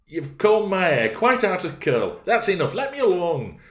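peevish, petulant, very high, shrill and loud. Catherine, speaking to Nelly, who is combing her hair, petulant. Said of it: "she added petulantly".

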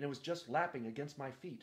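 ordinary delivery

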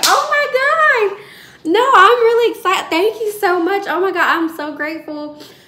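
put-on shrill, booming, very high, loud, thrilled gushing. Retelling thanking a caller for a job offer: retelling own excited thanks. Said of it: "I was so excited on the phone".

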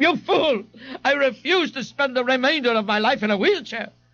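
very high, shrill, piercing scream. After his fall, Ignatius screams at Mr. Gonzalez, screaming. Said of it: "Ignatius screamed".

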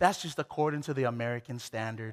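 very soft, quiet half-whisper. Retelling what mom said after the doctor's visit: imitating a half-whisper. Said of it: "my mom would always whisper".

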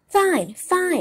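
joyful, overjoyed voice, full of joy. Reading the story, the narrator voices pinocchio answering the fox, joyful. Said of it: "cried Pinocchio, dancing about with joy".

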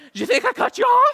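play-acted, very high, meek, timid, backing-down voice. Retelling facing a much bigger driver: imitating own timid backing down. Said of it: "I totally wimped out".

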